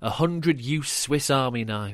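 ordinary delivery

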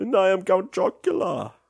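very high, swooping spooky voice. Discussing Halloween game sales, the speaker shows off a spooky Count Chocula voice. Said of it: "This is my very spooky voice".

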